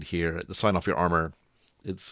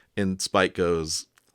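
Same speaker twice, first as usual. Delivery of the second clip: usual speaking voice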